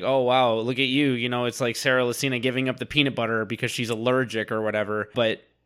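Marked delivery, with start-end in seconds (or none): none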